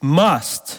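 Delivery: 'must' strongly stressed. Speaker explaining what the Messiah had to accomplish, stress on 'must'. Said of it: "and the emphasis is on must".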